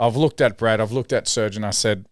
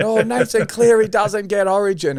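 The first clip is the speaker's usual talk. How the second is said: yelling with raised pitch; 11 semitones higher, 4 dB louder than usual. Retelling a match where a friend mocks a player: imitating a friend yelling. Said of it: "And he's yelling".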